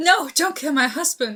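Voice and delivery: mock alarmed, frantic, high-pitched panicked pleading. Retelling a character's reply in a story: imitating a panicked plea. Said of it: "and she's panicked".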